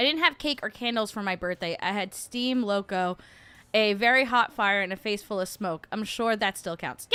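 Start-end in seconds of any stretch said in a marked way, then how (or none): none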